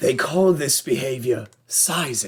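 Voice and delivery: slow nature documentary voice. Describing two dudes facing off over a girl, narrate in a David Attenborough impression. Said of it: "literally hear David Attenborough just like".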